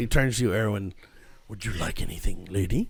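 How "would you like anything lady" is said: soft, smooth, suave, courtly gentleman waiter voice. Voicing a suave gentleman waiter greeting the players: suave gentleman waiter voice. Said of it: "a very suave gentleman".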